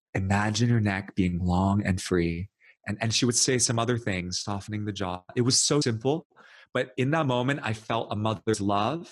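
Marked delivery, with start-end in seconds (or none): 0.2-2.5 imitated sweet, gentle angelic voice. Retelling a teacher's words during a head-holding session: imitating a sweet angelic voice. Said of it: "she had the sweetest little angelic voice".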